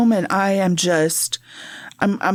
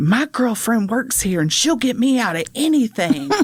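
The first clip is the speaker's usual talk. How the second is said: acted-out prisoner's yell; 3 semitones higher than usual. Speaker recounts hearing an inmate in jail; retelling an inmate's yell. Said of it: "and he yells".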